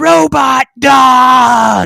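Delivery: piercing, very high, very loud shrill scream. Recounting Arya picking up his project, imitating her full-volume scream. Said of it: "she just screamed as loud as she could".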